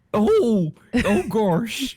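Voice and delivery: high-pitched dopey dog voice. Asked to show a Goofy voice, doing a Goofy voice. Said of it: "It's my Goofy voice".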